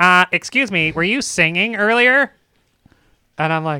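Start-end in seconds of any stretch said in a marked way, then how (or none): 0.0-2.3 the nerdiest voice imaginable. Retelling a stranger's question through the door, in a nerdy voice. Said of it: "gives the most like nerdy voice I've ever heard".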